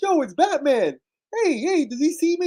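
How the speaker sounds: put-on Boston accent, very high and slow. Acting out a ghost nobody else can see, talking about batman, in a put-on boston accent. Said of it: "he's got that Boston accent".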